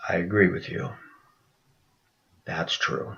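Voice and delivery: whispered, very quiet, breathy, barely audible. Retelling what a woman answered in agreement: imitating a very quiet reply. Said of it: "She said very quietly".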